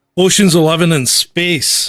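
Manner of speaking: booming, very loud, grumpy put-on persona voice. Ranking Rogue One at number ten, in a put-on grumpy voice. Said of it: "I'll do it in my Grumpy [name] voice".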